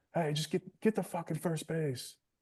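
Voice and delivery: very high, shrieking screaming yell. Retelling a ball game, the speaker imitates their own bench screaming at a hit batter. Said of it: "our bench is like screaming".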